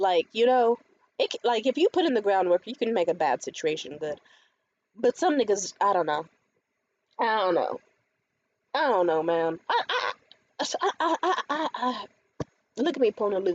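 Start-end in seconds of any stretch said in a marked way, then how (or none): 9.7-13.5 very slow, high stutter repeating I. Left speechless while recounting a phone call, stuttering. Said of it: "I'm stuttering".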